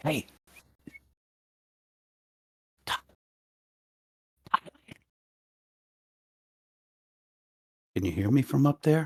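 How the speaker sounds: whispering. Calling up quietly to Tarlin on the building: whispering up to a companion. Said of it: "I'm whispering for Tarlin".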